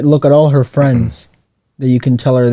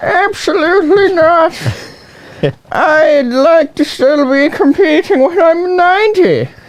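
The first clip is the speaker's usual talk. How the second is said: put-on elderly Irish woman voice, very high-pitched. Asked whether she wants to do a voice, answering in an irish old lady voice. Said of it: "That's more like uh, Irish old lady".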